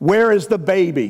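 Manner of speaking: acted startled half-shout, mild and sudden. Retelling a wife bolting up in bed asleep: imitating someone yelling. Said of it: "she yells out".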